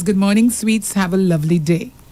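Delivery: plain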